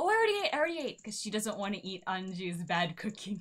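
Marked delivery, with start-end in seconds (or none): 0.0-1.0 put-on old woman voice, much higher, louder. Retelling a grandma refusing food brought to her, in a mock-senile grandma voice. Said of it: "Grandma is like pretending to be senile".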